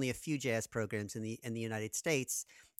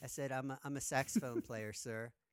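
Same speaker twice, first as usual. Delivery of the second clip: normal talking voice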